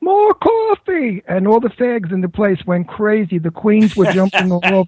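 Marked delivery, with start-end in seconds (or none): 0.0-1.2 very high, sudden yell. Retelling Bette Davis turning to the waitress in a restaurant, imitating her yell. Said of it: "turned around and yelled to the waitress".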